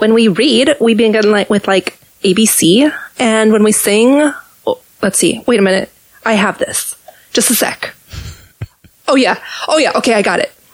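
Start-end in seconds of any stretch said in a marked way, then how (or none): 0.0-4.3 slow, drawled, put-on Valley Girl accent. Quoting Sound of Music after the other speaker asks: Valley Girl voice. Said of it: "I was doing my Valley Girl voice".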